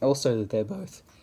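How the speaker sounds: voice breaks on "they're both". Mixing up two cat villagers while talking, the speaker has a voice crack. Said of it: "Sorry, voice crack".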